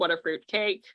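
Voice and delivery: ordinary delivery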